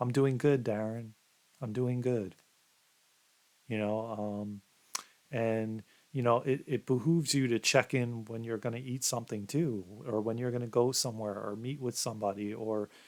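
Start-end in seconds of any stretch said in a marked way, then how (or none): 0.0-2.3 imitated soft, loving, mock-tender voice. Speaker voices their own body answering a morning check-in, put-on soft loving voice. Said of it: "I get like this soft voice, loving voice".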